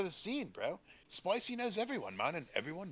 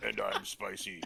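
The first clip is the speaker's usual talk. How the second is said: very low, serious voice; 10 semitones lower than usual. Introducing the podcast with a co-host, trying Spicy's voice. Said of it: "I can't do Spicy's voice".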